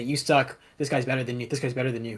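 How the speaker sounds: plain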